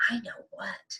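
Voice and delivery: put-on hushed, soft whisper in a small child's voice. A mother retelling what her three-year-old son whispered to her, retelling a toddler's whisper. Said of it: "he's whispering mommy to me".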